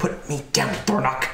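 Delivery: hushed, secretive stage whisper. Game master voices a woman half-whispering to the player's character, half-whispering. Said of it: "then she whispers to you".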